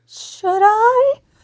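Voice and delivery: very high, puberty-like crack. Retelling a reply to a doctor's question: imitating own high-pitched voice. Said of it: "You know when your voice goes high".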